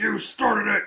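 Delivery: loud, high-pitched scream. Retelling a wrestler screaming in an opponent's face: imitating Goldberg screaming. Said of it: "he's screaming in Gunther's face".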